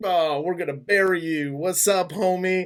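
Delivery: play-acted, brash, cocky, swaggering confident voice. Retelling a dinner scene, imitating a character's big dick energy. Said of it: "big, big dick energy".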